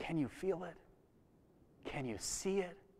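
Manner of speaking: very hushed, quiet, under-the-breath whisper. Imagining a scene, voicing a character turning to a stranger: whispering as Peter. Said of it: "he turns probably to a stranger and whispers".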